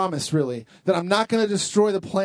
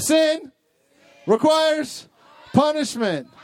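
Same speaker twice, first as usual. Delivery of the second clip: very high, separated, one word at a time; 9 semitones higher than usual. Leading a crowd to repeat a phrase, saying it one word at a time. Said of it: "one word at a time".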